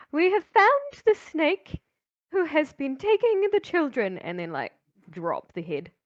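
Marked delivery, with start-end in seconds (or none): 0.1-4.1 overloud proclaiming delivery, pitched very high. Announcing a kill to the gathered crowd, a bit too loudly. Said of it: "kinda say a little bit too loudly".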